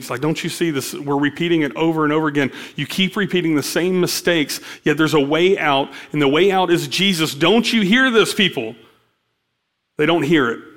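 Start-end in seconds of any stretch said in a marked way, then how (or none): none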